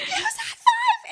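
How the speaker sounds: panicked screaming. Retelling a scary ride that kept dropping: retelling own panicked screaming. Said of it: "I'm just screaming like a lunatic".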